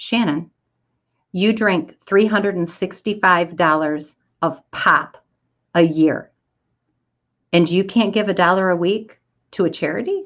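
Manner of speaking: usual speaking voice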